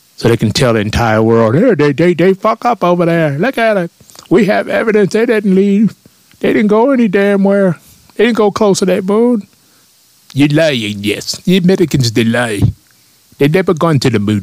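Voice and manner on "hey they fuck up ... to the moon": bad fake Soviet accent, very high pitched. Speaker acts out a bit about the moon landing in a bad Soviet accent. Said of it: "That's my Soviet accent impersonation".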